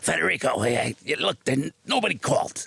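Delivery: rough, really scratchy, fed-up, angry voice. Retelling what Bob said once he got annoyed, imitating Bob's scratchy voice. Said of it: "He had this really scratchy voice".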